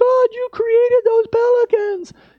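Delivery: tearful, awed crying-out, very high and very loud. Recalling sitting on a surfboard at sunrise as pelicans pass: retelling crying out. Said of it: "I just started crying".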